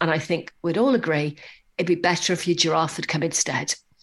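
put-on seriousness. Retelling a youngster's final comment in his thank-you speech, mock-serious. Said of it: "very serious".

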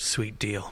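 muttering under breath. Speaker retells what a young guy said about the seats, under his breath. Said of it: "under his breath".

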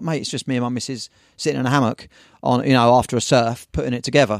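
plain

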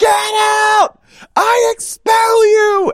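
slow, very high, drawn-out scream. Joking about a reality-show cast member, mock Hereditary screaming. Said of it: "in Hereditary screaming".

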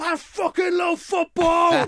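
very high, loud, celebratory footballer-style shout. Describing players running off the pitch, imitating a player shouting. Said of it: "when players run off and they're shouting stuff".

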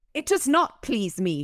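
vicious sudden snap. Narrator reads a woman's reply after she is asked to step aside: spat, sudden and vicious. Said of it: "she spat, sudden and vicious".

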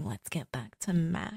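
very quiet, soft, close, murmured. Recounting a TV scene to co-hosts, doing a Buffy impression. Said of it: "the best Buffy impression you've ever done".

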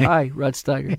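quiet, subdued, a little sad. Retelling meeting Rod Steiger: imitating Rod Steiger, quiet and sad. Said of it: "so he was very quiet. He was a little bit sad".

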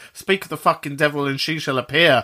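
plain

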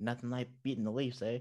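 jeering, taunting, mocking tone. Speaking of hoping Calgary gets in, not to bash rival fans; generic mocking voice. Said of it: "that's is my like my generic like mocking voice".

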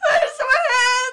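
full-on scream, very high-pitched and very loud. Retelling how Kurt finally screamed from the doorway; imitating Kurt screaming.

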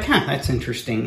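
ordinary talk, nothing marked

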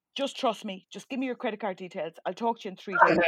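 ordinary talk

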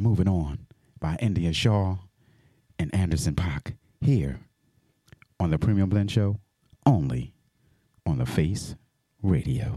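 smooth quiet-storm radio delivery. A radio dj back-announces a track on his show, in a smooth quiet storm voice. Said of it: "i'm gonna give you all that smooth Quiet storm voice".

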